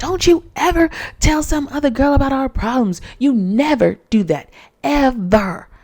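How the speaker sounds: put-on angry scolding tone. Retelling how Huda scolded her partner: imitating an angry scolding. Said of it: "Now Huda is pissed again".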